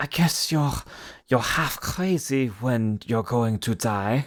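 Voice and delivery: slow, worried voice with put-on German accent. Reading a movie quote as a worried World War Two soldier: put-on German accent. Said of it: "I read the quote in a character of his choosing".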